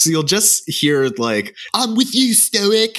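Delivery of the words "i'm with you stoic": put-on very high-pitched voice with Scottish accent. Quoting a background voice from the film: David Tennant Scottish accent. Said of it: "David Tennant is one of the background voice".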